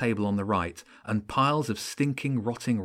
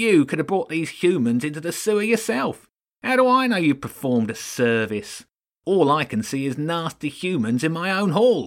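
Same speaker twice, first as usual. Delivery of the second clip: suspicious, pitched-up voice growing louder with rising anger; 6 semitones higher, 6 dB louder than usual. Narrator reads Lord Ratzenberg doubting a rat's claim in his hall, growing louder. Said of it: "Sitting on the throne was another rat. He was huge, probably taller than [name], though it was hard to tell, and grossly fat. His ratty belly hung over his knees, and he had jowls of grey flab hanging".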